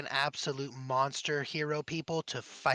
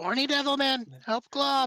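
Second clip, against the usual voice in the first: shrill, very high, loud yell in character voice; 10 semitones higher, 5 dB louder than usual. Voicing a character calling a missing ally for help: yelling in character as glob. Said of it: "he's gonna yell out".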